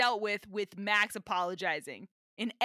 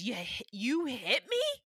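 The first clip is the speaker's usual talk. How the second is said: put-on character voice, betrayed and aghast. Acting out how Michael reacts to being hit, in a betrayed Michael voice. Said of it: "he's so betrayed".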